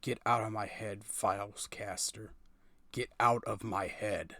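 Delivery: seething, enraged, very angry tone. A narrator voices a character's repeated words, in a very angry tone. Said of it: "repeated in a very angry tone".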